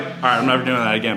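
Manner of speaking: ordinary talk, nothing marked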